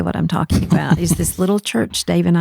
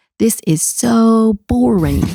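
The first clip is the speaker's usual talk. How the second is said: put-on high, piped-up eight-year-old outburst voice; 5 semitones higher than usual. Retelling how a boy screamed out in a hushed crowded room, imitating an eight-year-old screaming. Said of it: "he screams out in his eight-year-old voice".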